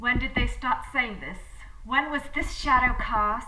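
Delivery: cold, commanding, loud, fierce tyrant ice-queen voice. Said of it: "a fierce dark ice queen, a tyrant".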